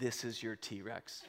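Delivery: quiet, low, slow delivery.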